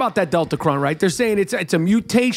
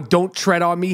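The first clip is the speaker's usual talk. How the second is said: ordinary talk, nothing marked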